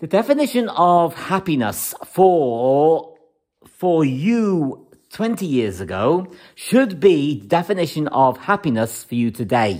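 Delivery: slow, deliberate, spelled-out pacing, "you" drawn out. Addressing listeners so they get the message, speaking slowly. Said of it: "the reason why I'm saying it slowly".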